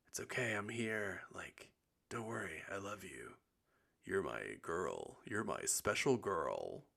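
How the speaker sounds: soft, swooping, film-style phone-call voice. Speaker retelling how they comforted a girl, using a movie phone voice. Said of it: "I was like using my movie phone voice".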